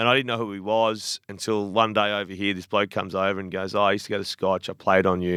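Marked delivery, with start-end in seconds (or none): none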